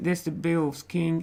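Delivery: normal talking voice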